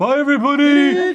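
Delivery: high, loud, goofy put-on voice. Signing off at the end of the show to everybody: silly voice. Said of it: "[Hank in a silly voice]".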